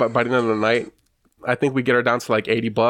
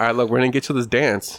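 normal talking voice

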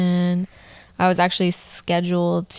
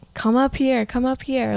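thrilled, excited shout, pitched up; 6 semitones higher than usual. Retelling shouting to someone honking for them to come down, retelling a yell. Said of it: "i'm like yelling like".

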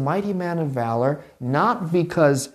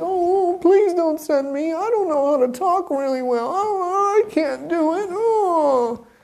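put-on shrill, very high cartoon crybaby whine; 13 semitones higher than usual. Retelling how Moses answers God's call to go to Pharaoh, mock-whiny crying Moses voice. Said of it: "He's like a whiny cartoon character".

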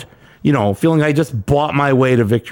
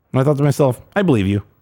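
usual speaking voice

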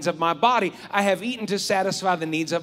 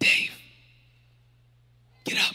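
faint, breathy, barely audible whisper. Retelling leftover pizza calling from the refrigerator at night: imitating pizza's faint whisper. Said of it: "I hear a faint whisper".

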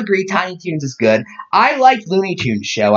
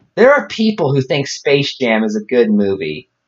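normal talking voice

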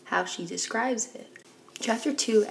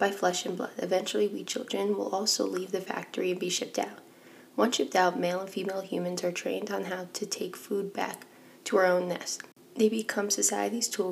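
usual speaking voice

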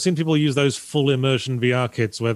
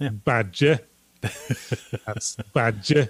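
put-on Yorkshire accent. Chatting about a character called Derek Badger, saying the surname in a Yorkshire accent. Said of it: "said in a Yorkshire accent".

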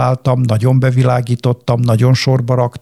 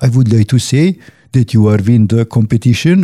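put-on Indian-accented English voice. Telling how a Sony caller announced the competition win, imitating Indian-accented caller. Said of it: "felhívott egy indiai akcentussal egy hölgy".

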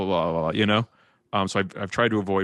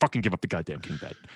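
mock-frustrated, quieter voice; 4 dB quieter than usual. Retelling an apartment argument with a friend, imitating frustrated Gopal. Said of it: "he was so frustrated at me".

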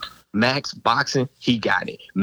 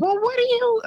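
mock high-pitched, pitchy voice, raised higher. Imitating her interrupting a relaxed conversation: imitating a high pitchy voice. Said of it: "It's a pitchy voice".

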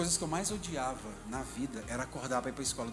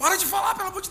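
mock crazed shouting, much higher and louder; 10 dB louder than usual. Recalling wanting to run out of church, the speaker acts out: imagined crazed shouting. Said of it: "gritando louco".

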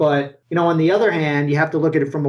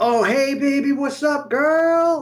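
very high, very slow, cocky swaggering tone; 10 semitones higher than usual. Retelling his own past approach to women: imitating a cocky pickup line. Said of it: "I'm putting on my act now, the confident guy, the extra cocky guy".

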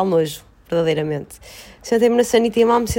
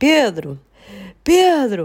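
mock yelling, put-on loud shouting. Retelling how you called out while lying on the bathroom floor, retelling shouting for pedro. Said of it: "comecei aos gritos".

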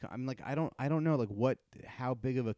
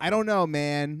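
loud, mock plainly irritated, annoyed tone; 4 semitones higher, 8 dB louder than usual. Retelling the reply given to a man, acting out being clearly annoyed with him. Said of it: "clearly being annoyed".

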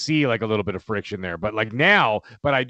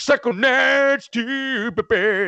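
goofy, very high, slow, drawn-out voice; 11 semitones higher than usual. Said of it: "the goofy voice and stuff".

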